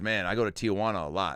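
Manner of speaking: ordinary talk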